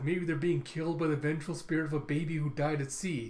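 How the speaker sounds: plain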